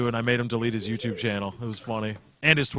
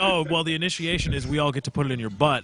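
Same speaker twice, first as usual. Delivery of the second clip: ordinary delivery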